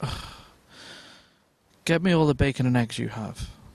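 hushed stern character voice. Retelling a restaurant scene, served salad instead of steak: quiet, firm Ron Swanson voice. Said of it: "he's very sort of quietly, firmly spoken".

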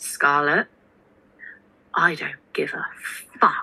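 utterly solemn, weighty, dead-serious grave tone. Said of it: "in the most serious voice ever".

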